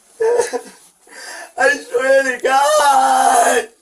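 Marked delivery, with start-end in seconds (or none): 1.6-3.6 loud, slow, pleading scream. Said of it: "Can you stop screaming?".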